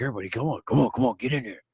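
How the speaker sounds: horrible, terrible dinosaur creature voice. Retelling what a man shouted to everyone, in a horrible dinosaur impression. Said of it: "it's my horrible dinosaur impression".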